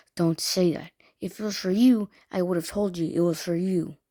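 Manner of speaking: put-on mean, cutting teacher tone. Retelling what a girl said to the speaker as a fifth grader, imitating the meanest tone. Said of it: "says in the meanest tone".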